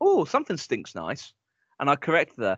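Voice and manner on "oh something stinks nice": usual speaking voice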